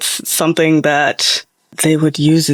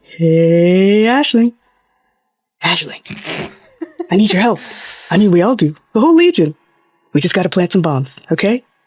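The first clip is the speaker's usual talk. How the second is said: tiny hand-puppet voice with long "hey"; 3 semitones higher than usual. A little hand puppet pops up asking a character for help: little puppet head voice. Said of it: "it might just be a little puppet head".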